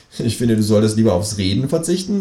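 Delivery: ordinary talk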